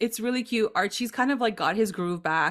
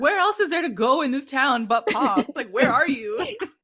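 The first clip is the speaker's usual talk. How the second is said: acted-out fed-up, angry, loud, high outburst; 5 semitones higher, 4 dB louder than usual. Retelling a scene where Archie, distracted, asks where someone is: imitating Archie saying it loudly. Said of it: "He says it so loud".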